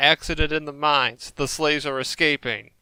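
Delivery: ordinary delivery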